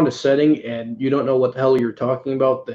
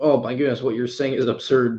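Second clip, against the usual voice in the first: usual speaking voice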